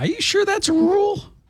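squeaky, very high-pitched, doubtful voice. Speaker acts out a reply in the drinking story, in a very high-pitched voice. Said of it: "I say with a very high-pitched voice".

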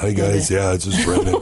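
put-on tired superhero voice. Imitating his own voice after performing every night: Batman voice. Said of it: "Brandon's Batman voice after he's been performing".

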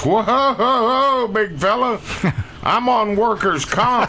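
very high, slow, drawn-out put-on holler. Retelling a story, voicing the last guy in line as he yells: retelling a man's yell. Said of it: "the guy yells".

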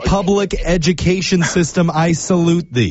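slow, drawn-out, sarcastic, ironic delivery. Responding in an argument about a school incident, sarcastic. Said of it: "I don't really appreciate or get your sarcasm".

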